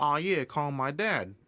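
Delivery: normal talking voice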